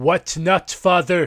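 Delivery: acted scornful, condescending tone. Retelling answering a father's advice, mock-condescending tone. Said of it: "in exactly the condescending, why not, father tone".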